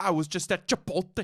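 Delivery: put-on voice with exaggerated, over-pronounced words. Showing how a comedian talks: Sebastian Maniscalco impression. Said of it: "he kinda talks like this".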